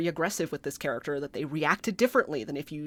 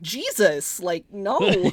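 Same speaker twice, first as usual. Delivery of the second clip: usual speaking voice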